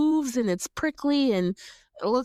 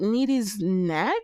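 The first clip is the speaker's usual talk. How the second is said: ordinary talk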